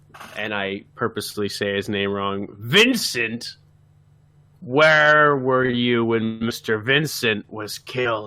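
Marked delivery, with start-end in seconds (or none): 2.5-8.3 put-on slurred drunk character voice, lower. Voicing a drunk character questioning the mean lady: slurred drunk character voice. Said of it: "I slur a little bit and I say".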